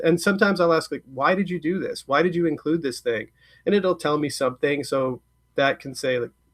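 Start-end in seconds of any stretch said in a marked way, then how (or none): none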